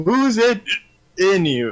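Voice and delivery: slow, insistent, pressing, demanding tone. Voicing a character asking who is there: demanding. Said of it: "literally demanding".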